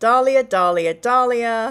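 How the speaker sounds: Australian accent on a name. Speaker counting chat's votes aloud, Australian accent. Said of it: "Why am I saying that in an Australian accent?".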